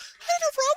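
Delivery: very high-pitched voice. Quoting your favorite meme of him, do a high-pitched Shannon Sharpe voice. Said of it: "He gets in that high pitched voice".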